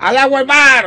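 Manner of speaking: loud shout. Retelling a joker at the back yelling during a speech, retelling a shout.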